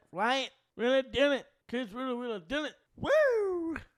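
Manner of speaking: swinging pitch with a long-held "woo". Doing an impression when asked by another speaker: Ric Flair impression. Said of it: "best Ric Flair impression".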